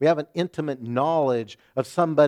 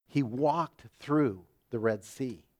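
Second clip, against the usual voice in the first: usual speaking voice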